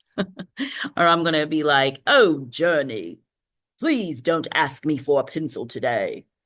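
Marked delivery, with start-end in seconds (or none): 2.0-6.2 regal, imperial, emperor-like delivery. Speaker shows how they'd use their emperor voice in everyday life. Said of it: "I'm going to start using that voice more often".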